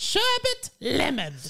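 very high, loud character voice. Doing a McGonagall impression of the password: McGonagall impression sounding like Consuela. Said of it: "Yours sounds like, um, Consuela".

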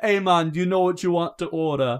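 put-on Jamaican accent. Retelling how a game character taking an order talked, jamaican accent. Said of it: "literally all talk like that".

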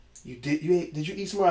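ordinary delivery

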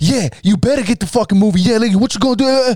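mock, very high, shrill, in-your-face yelling. Recounting a man getting in their face; retelling someone yelling. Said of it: "yelling in my ear".

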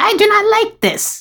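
very high, shrill, angry witch screech. Speaker retelling a story where a witch curses the heroes, imitating a shrill witch. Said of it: "this very shrill, like, ... voice".

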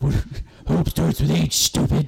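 stupid rough high hero voice. Retelling a comedy skit where Batman talks to Superman: stupid Batman voice. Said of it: "he has a really stupid voice".

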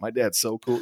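ordinary talk

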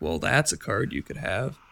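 low, quiet delivery close to the mic. Showing how a streamer talks right into the microphone: imitating Reynad's monotone voice. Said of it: "he speaks like this right into the microphone".

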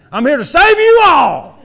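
very loud, very high, booming rural drawl. Picturing a sword-wielding savior announcing his arrival: redneck voice. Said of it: "He'd probably have a redneck voice too".

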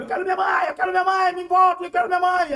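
put-on shrill, very high, very loud, desperate child's scream. Retelling yelling as a child while carried off on a bicycle: imitating own childhood yelling. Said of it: "Comecei a gritar".

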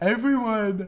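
tired speech stretched and distorted by yawning. Telling about going to Nashville after missing camp, yawning while talking. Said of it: "I'm yawning".

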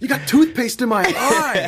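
very high, drawn-out squealing freak-out. Speaker reenacting an actor's line from a film scene: retelling a freak-out. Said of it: "he like freaks out".

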